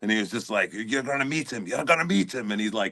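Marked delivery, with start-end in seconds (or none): 0.7-2.5 put-on spoken in Scottish accent. Retelling what a Scottish friend kept saying: Shrek accent. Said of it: "in the Shrek fucking accent".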